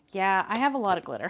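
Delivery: ordinary talk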